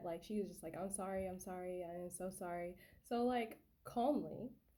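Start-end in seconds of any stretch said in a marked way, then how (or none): 0.8-2.8 play-acted frantic, gushing, profuse delivery. Retelling a friend's reaction after accidentally punching the speaker: imitating profuse apologizing. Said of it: "apologizing profusely".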